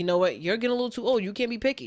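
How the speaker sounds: constant, insistent nagging, close and pushy. Explaining why a sitcom joke is funny, imitating a nagging mom. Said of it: "a mom who's just in my ear".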